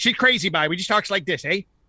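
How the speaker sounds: Newfoundland accent, Newfie way of talking. Showing the others what the Newfie accent sounds like: Newfie accent. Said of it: "you guys ever heard the Newfie accent?".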